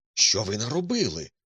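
startled, alarmed outcry. A young man lunges across the table to stop him, exclaiming. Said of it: "вигукнув він".

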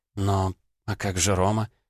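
ordinary delivery

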